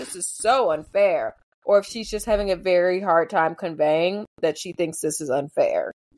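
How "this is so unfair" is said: slow, openly sarcastic, complaining tone. Imitating Emma's line about the dance: sarcastic imitation of Emma. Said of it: "sarcastically being like".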